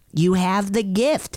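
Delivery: put-on Filipino accent. Retelling what mom said at the ER, in a put-on Filipino accent. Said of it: "cue Filipino accent".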